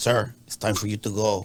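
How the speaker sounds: put-on speech with an Eastern European accent. Retelling a story, quoting the man who tapped his shoulder, eastern european accent. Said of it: "Eastern European accent is like".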